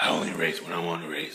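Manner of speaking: very low, soft, raspy put-on character voice. Describing a Batmobile-like car character, quoting him in a low raspy voice. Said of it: "he talks similar to that too".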